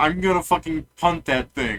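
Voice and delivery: full-throated, screaming yell. During a game, the speaker voices a character that starts screaming. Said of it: "It starts screaming".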